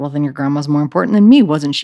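fast delivery dripping with attitude. Retelling what the insistent class teacher said back, imitating an attitude-filled retort. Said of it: "he said it with such an attitude".

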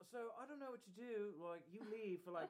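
high put-on voice with English accent. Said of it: "gave him an English accent".

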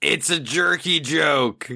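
high, drawn-out yell in character voice. Voicing a character reacting to a joke in a game scene: yelling in character. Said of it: "would yell".

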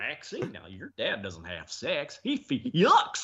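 silly, swooping high cartoon dog voice. Describing a meme, the speaker quotes Goofy talking to Maxie: Goofy voice. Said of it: "Goofy saying".

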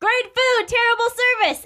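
put-on, very high, hollered delivery. Retelling how the people greet visitors: imitating people shouting. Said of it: "the people shout".

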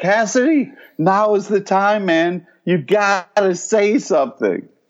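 high-pitched, loud yelling. Retelling reacting to a show, yelling at the screen. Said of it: "yelling at the screen".

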